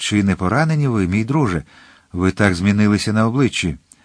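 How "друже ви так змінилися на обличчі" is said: ordinary delivery, nothing marked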